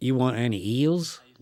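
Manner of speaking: put-on mimicked strong, thick, extreme Georgia accent. Retelling what a diner waitress in Georgia asked him, imitating a strong Georgia accent. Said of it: "the Georgia accent was so so is so extreme".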